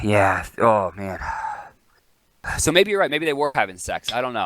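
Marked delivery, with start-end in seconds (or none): 0.0-1.2 put-on heavy breathing, lower and slower. Retelling what the male commentator said after the female one, imitating heavy breathing. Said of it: "the guy can only heavy breathe".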